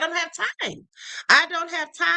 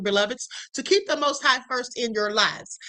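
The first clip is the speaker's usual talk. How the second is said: normal talking voice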